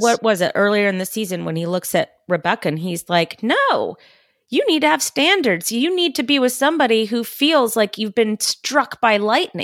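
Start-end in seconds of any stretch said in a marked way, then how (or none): 3.4-9.6 mock cross, angry-sounding, serious tone, kindly underneath. Quoting Roy speaking to Rebecca: angry Roy voice. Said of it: "said in his angry Roy voice".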